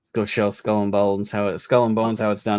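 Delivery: normal talking voice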